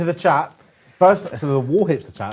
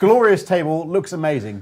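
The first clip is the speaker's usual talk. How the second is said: ordinary delivery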